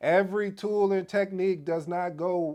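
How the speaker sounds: high yelling. Presenter repeating a point to listeners, yelling. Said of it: "I'm sorry, I'm yelling".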